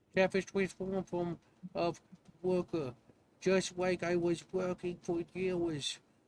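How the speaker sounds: little catfish creature voice. Reading a donor's message aloud on stream, in [name]'s little catfish voice. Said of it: "he says with his little catfish voice".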